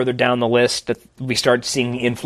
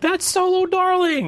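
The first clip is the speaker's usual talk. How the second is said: sudden, very high, acted-out scream. Retelling standing up in a chair during a segment: imitating own past scream. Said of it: "I stood up in my chair and screamed".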